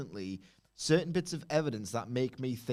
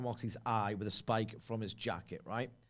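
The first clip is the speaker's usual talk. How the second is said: ordinary talk, nothing marked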